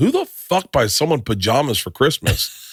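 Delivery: very casual, breezy, offhand tone with swooping tune. Retelling the dad's remark as gifts are opened: imitating a very casual remark. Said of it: "my dad just very casually goes".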